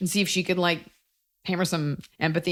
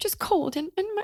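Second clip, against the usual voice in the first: cold, helpless, pitiful voice, very high pitch; 14 semitones higher, 3 dB quieter than usual. Voicing a cold coworker to build compassion: imitating a cold, pitiful woman. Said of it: "Give her this voice".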